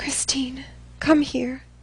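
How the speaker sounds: hoarse, raspy whisper. After throwing the dress down, the speaker calls Christine over in a hoarse whisper. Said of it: "In a hoarse whisper".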